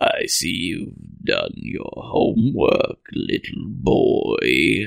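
deep, dark, rough, grizzled raspy voice. Retelling a man picking up a cookie and speaking to a little boy: dark, deep, grizzled voice. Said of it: "in his dark, deep, grizzled voice".

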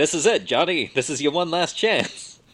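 put-on old-fashioned New York gangster voice. Quoting the character as John Grammaticus dies for the last time, in a 1940s New York accent. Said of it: "1940s, maybe, New York accent".

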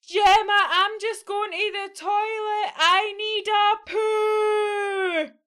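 massive, shrill, very high-pitched roaring bellow. Reading a story aloud, Abby speaks to Gemma in front of the class: massive bellow. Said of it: "her voice came out in a massive bellow".

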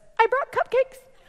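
mock, very high, jittery and nervous. Retelling a neighbour's first visit with cupcakes: imitating someone nervous. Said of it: "she's so nervous".

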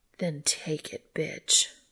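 slow, commanding, menacing growl. Reading a story, the woman leans over the man and speaks, growling. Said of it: "she growled".

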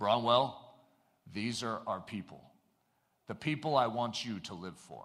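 deep, gentle voice. Telling a story, the speaker quotes William Booth to his son in a deep voice. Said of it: "you have to give a deep voice for it".

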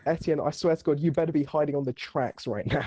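ordinary delivery

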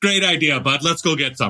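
put-on Canadian accent, bad, mixed and inconsistent. Acting out a trip to get donuts, bad mixed canadian accent. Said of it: "My accents are all over the place".

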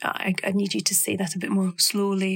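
plain

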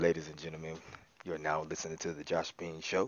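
put-on radio bass, very deep, low and soft. Introducing the josh bean show to listeners: put-on bass voice. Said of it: "He got bass in his voice".

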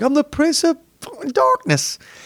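very high, wild, swooping freak-out, voice swinging up. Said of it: "And he's like".

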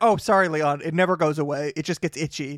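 ordinary delivery

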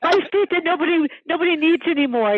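very high voice, laughing through the words. Answering a compliment on her feet, laughing while talking. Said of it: "I'm laughing".

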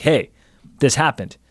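ordinary delivery

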